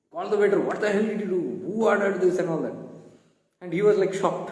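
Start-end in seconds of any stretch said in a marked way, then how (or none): 0.6-2.8 put-on furious, heated, angry outburst. Retelling a restaurant story, the speaker acts out a friend scolding the waiter: retelling an angry yell. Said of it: "My friend was yelling".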